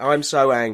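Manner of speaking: ordinary talk, nothing marked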